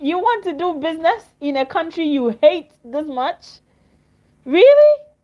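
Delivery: words broken by laughter. Reacting to a claim from someone's video, talking to viewers, laughing while talking. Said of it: "I'm sorry guys for laughing".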